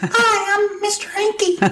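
very high, loud, shrill voice. Acting out a bit of guy humor for the others, in a high, loud Mr. Hankey voice. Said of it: "And real high".

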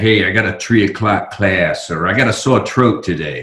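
put-on heavy, broad Brooklyn New York accent. Speaker recalls fraternity buddies from brooklyn they lived with, imitating a brooklyn accent. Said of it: "They were very Brooklyn".

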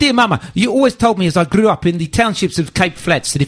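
put-on best-effort Cape Town accent. Reading a letter aloud after complaining of being undermined, Cape Town accent. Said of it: "attempt my best Cape Town accent".

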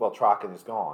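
plain, matter-of-fact delivery, zero emotion. Retelling a character's line about a loss: imitating a matter-of-fact delivery. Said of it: "done so matter-of-factly".

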